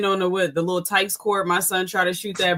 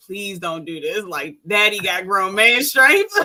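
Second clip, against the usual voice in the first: earnest, pleading, begging voice. Retelling how he begged his brother not to fight their dad: retelling begging. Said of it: "And I literally begged him".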